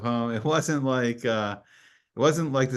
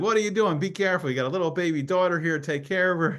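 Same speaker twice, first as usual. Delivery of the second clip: imitated caring scolding tone, pitched much higher; 6 semitones higher than usual. Retelling how a man warned them instead of ticketing them; imitating a caring scold. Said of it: "He was just like it was like family".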